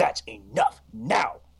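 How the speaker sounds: firm, stern, rebuking delivery. Recalling dad pointing a finger at his young child mid-sermon; imitating dad's stern voice. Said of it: "he like gets this stern like voice".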